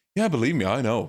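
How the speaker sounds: light, playful teasing, upset only for show. Retelling how the Arabic dub delivered a line: imitating Steve teasing, not upset. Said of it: "He just sounds like he's messing with her".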